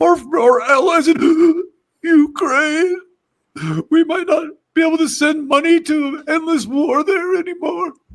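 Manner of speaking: acted, tearful, choked-up voice, very high and loud. Mocking a speaker who choked up over Ukraine: mock choked-up Jimmy Kimmel voice. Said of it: "he gets choked up over Ukraine".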